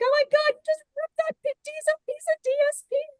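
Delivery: mock frantic, panicky freak-out, squeaking high. Imitating Kathy reacting to the paper being cut: imitating Kathy freaking out. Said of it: "Kathy's, like, freaking out".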